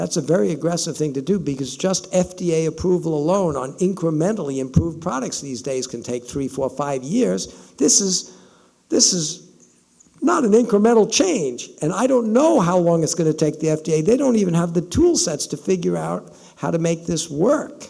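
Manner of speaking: wry, mildly sarcastic. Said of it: "and I was being somewhat sarcastic".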